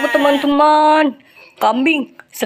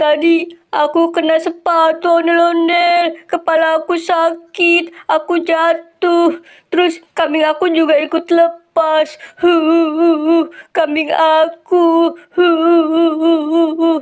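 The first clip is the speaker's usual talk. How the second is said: crying through the words, hu-hu sobbing; 3 semitones higher than usual. Explaining the fall and the lost goat, crying. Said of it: "Kamu kenapa nangis".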